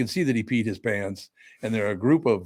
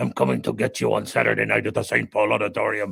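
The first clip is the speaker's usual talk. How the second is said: rough, raspy wrestler-style voice. Describing a professional wrestler to the others: Mad Dog Vachon voice. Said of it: "and he talked like this".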